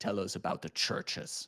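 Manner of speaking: low, commanding, insistent, demanding tone. The vampire prince, towering over a younger vampire, speaks in a low, demanding tone. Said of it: "in a low, demanding tone".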